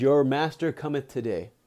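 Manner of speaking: mock heavenly female voice. Retelling how a voice spoke to a meditating man: womanly divine voice. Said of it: "a womanly divine voice comes to him".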